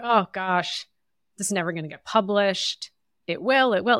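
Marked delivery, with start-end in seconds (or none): none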